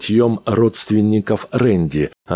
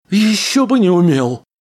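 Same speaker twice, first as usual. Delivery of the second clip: very high, squeaky, little rat-like voice; 11 semitones higher than usual. Reading a rat trapped under a helmet answering its captor, in a squeaky voice. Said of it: "донесся из-под каски писклявый голосок".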